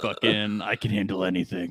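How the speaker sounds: impression with acted bravado. Speaker acts out a guy refusing the vaccine, imitating the guy. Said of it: "He's like".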